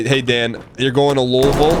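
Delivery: ordinary talk, nothing marked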